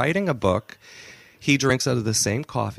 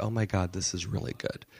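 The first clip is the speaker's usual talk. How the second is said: put-on crying voice, lower and quieter; 3 semitones lower, 9 dB quieter than usual. Retelling what he says after finishing his tweaks, imitating someone crying. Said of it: "he's crying and he goes".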